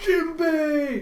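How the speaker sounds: high, loud, excited, overjoyed shout.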